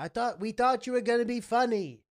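put-on old woman voice, high, yelled, complaining. Retelling what an old woman called out at a silent gig: imitating an old woman yelling. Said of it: "this old woman yells out".

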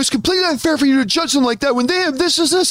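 play-acted defensive tone. Retelling an online debate where someone got defensive: imitating someone getting defensive. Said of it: "so defensive".

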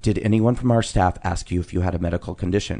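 very quiet, discreet, low-key, confidential tone. Retelling what the manager asked after the flight: imitating someone speaking very quietly. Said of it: "very quietly".

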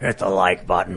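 deep demon voice, very low. Retelling a scary dream where Ian kept saying it, Ian as a demon voice. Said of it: "Trying to imitate Ian being a demon".

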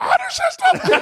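voice jumping way up, very high and surprised. Replaying own surprised reaction a moment earlier: imitating own voice jumping way up. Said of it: "way up".

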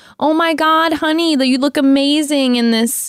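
put-on Fargo accent. Imagining a woman from Fargo complimenting someone, in a put-on Fargo accent. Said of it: "have that Fargo accent and be like".

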